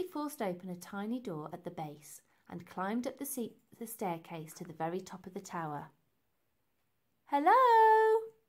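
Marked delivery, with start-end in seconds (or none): 7.2-8.2 carrying, very high, very loud, drawn-out call. Reading a story, a girl climbs into the clock tower room, calling out. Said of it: "called out Elsie".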